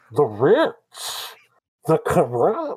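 muffled, slow, booming voice, as through cupped hands. Redoing the line after being told to cup hands: Bane voice. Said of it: "cup your hands over your mouth".

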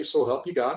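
ordinary talk

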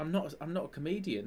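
put-on sincere, flustered voice. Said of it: "he's so genuine".

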